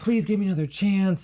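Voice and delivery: tearful, weeping, begging, pleading voice. Retelling what an ex said during a breakup: imitating someone weeping.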